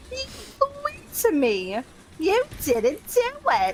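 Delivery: put-on very high, shrill, swooping old-crone voice with Jersey accent. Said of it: "What is that accent? Is that Philly?".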